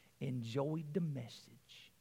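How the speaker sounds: cute, soft, low, gentle Tennessee twang. Quoting a grandmother from the congregation, in her cute tennessee twang. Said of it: "in her cute Tennessee twang".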